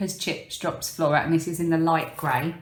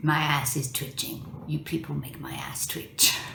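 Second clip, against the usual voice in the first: put-on soft, grumbling delivery in a French accent; 2 semitones lower, 5 dB quieter than usual. Retelling a film scene where she mimics him in a cafe, bitter old French man impression. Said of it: "bitter French man sitting in a cafe".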